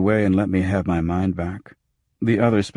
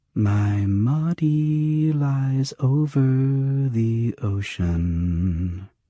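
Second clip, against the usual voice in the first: breathy, very slow, pitched up, "ocean" stretched out; 5 semitones higher than usual. Narrator reading a hologram ad's line, breathy, soft Honey voice. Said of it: "said Honey in a breathy, soft voice".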